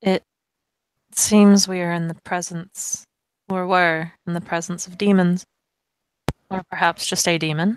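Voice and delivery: hushed, very quiet voice. As Zach, looking toward the group, speaking very quietly. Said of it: "very quietly say".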